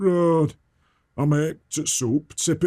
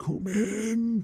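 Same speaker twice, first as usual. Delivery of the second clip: soft, eerie, sinister voice, drawn out; 6 semitones higher, 6 dB quieter than usual. Retelling what a funny little man said opening the door: imitating a really creepy voice. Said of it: "in a really creepy voice".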